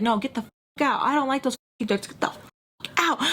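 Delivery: furious, restrained, half-shouted angry yell. Retelling how a woman at a party ordered her out: imitating someone screaming. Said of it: "screaming at me".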